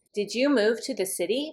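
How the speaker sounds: rising pitch on the word city. Showing a yes-or-no question, with rising pitch at the end. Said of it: "I'm going to have my voice go up like this".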